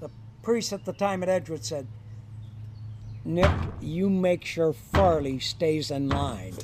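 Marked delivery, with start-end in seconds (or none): none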